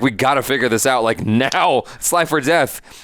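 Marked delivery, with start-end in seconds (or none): none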